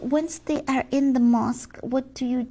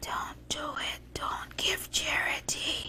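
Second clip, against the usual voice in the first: close, hushed whispering; 3 semitones higher, 12 dB quieter than usual. Acting out charity announcements, the speaker is whispering in their ears. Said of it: "there I am whispering in their ears saying".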